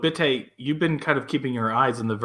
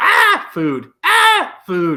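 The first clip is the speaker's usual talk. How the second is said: very high, very loud, shrill swooping screams; 14 semitones higher, 10 dB louder than usual. A game narrator voices what is in the opened crate screaming at the players, screaming voices. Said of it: "they're just screaming food at you".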